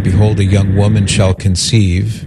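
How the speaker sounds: normal talking voice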